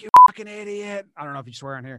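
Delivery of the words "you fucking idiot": very loud, pitched-up screaming outburst. Showing how he screams at players as a fan: imitating his own screaming. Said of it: "because I'm screaming, like".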